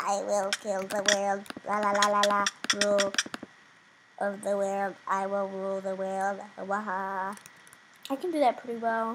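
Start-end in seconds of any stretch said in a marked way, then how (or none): 0.0-7.4 weird, slow, drawn-out alien-creature voice. Showing off how well the speaker can do alien talk, in an alien voice. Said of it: "I can do the alien talk really well".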